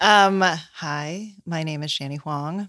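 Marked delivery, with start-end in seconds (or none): 1.4-2.7 low, soft, sexy sultry radio voice. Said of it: "You just went into sexy radio voice and you dropped in".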